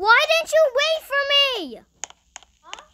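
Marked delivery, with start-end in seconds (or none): 0.0-1.8 loud, insistent, repeated hollering. During a game, the player repeats the question to Taheem; yelling. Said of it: "Don't yell, please. No yelling".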